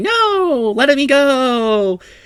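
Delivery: put-on slow, very high, drawn-out child's scream. Voicing grappled children in a game scene: children screaming. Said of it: "them screaming like".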